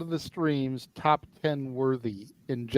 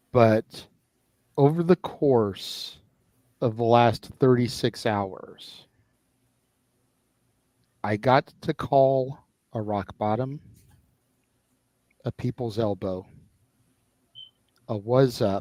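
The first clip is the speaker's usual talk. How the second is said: emotion kept in check, restrained delivery; 3 semitones lower than usual. Recalling the matches of the last 36 hours, holding back emotion. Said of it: "I'm speaking in this tone because I'm trying not to get wrapped up emotionally".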